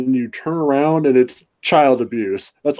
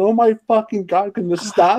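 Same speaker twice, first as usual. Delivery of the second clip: put-on pained, cringing tone, higher pitch; 7 semitones higher than usual. Retelling watching a painfully slow scene: retelling a cringing plea. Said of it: "cringing in my chair, going".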